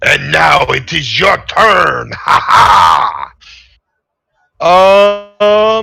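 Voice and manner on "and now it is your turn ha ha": smug, gloating, taunting voice ending in laughter. Voicing a character who turns right after a kill: in-character taunt. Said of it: "Now I will turn to my right and say".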